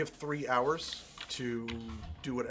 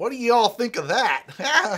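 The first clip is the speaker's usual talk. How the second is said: very loud, very high, swooping exaggerated American accent; 10 semitones higher, 9 dB louder than usual. Pointing out that nobody noticed, asking the others in a big American accent. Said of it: "big American accent".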